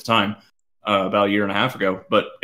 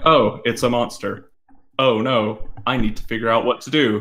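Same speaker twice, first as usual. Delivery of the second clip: put-on unbothered, nonchalant heroine voice. Critiquing a game demo's heroine, doing a mock-blasé Jill impression. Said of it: "she's not monotone".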